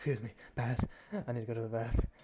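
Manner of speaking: skittery, wild-eyed, jittery creature voice. Voicing a wild-eyed half-elf were-rat hurrying to the bath: skittery, wild-eyed were-rat. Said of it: "kinda like, like, skittery. He's like".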